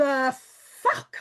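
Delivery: play-acted, very loud, booming, furious yell. Retelling a phone call from a man believed dead: imitating own fuming reaction. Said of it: "I was fuming".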